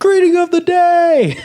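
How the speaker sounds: shrill, drawn-out, very high, loud taunting yell. Retelling a sophomore yelling from a car window: imitating someone yelling. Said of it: "he yells at my buddy".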